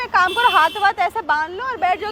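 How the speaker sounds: ordinary delivery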